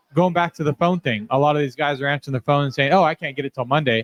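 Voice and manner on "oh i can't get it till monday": put-on proud voice. Imitating shop owners answering the phone: imitating someone saying it with pride. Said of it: "And they say it with pride".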